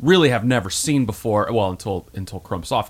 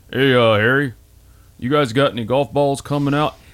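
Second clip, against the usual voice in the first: put-on Southern accent; 3 semitones higher than usual. Retelling the next-door neighbor asking about golf balls, Tom impression, Southern accent. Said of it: "I make him Southern".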